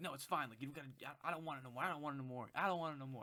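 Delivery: acted sulky voice. The speaker retells a quarrel, imitating what she said, mock-sulky. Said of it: "She was like".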